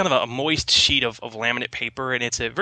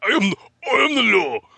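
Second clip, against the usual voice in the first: terrible put-on voice, belted out loud and high; 9 semitones higher, 6 dB louder than usual. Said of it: "Do my terrible, uh, Sylvester Stallone impression".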